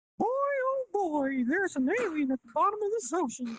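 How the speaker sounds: very high squeaky cartoon voice, swooping around. Asked to start the scene, the speaker opens in a Mickey Mouse voice. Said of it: "keep up on my Mickey Mouse voice".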